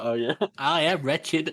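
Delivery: high, pitiful, cringing, wretched creature voice. Urged by another speaker to perform it, quoting Goyle in Goyle voice. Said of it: "You do such a good Goyle voice".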